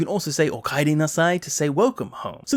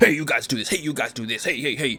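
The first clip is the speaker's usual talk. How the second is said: bossy, dead strict, domineering tone. Explaining a game scene, imitating bossy, strict Barrett giving orders. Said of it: "Barrett being all bossy and super strict".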